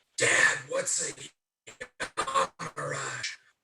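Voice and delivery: theatrical whisper, loud enough to carry. In character, asking Mirok a question in a stage whisper. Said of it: "In a stage whisper".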